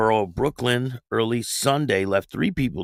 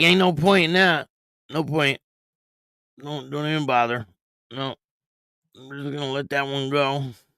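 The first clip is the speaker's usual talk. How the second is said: resigned, beaten-down, defeated, given-up tone; 4 semitones higher than usual. Voicing a cop in a video who just gives up: imitating a defeated cop. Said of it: "he just looks, like, defeated".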